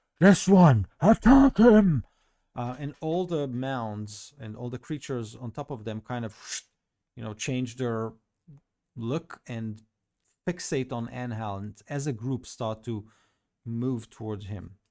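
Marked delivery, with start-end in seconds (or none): 0.2-2.0 very loud, shrill, high commanding shout. Narrating a game scene, a creature points its sword at Enhal: commanding shout. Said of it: "points its sword toward Enhal and shouts".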